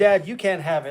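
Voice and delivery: ordinary talk, nothing marked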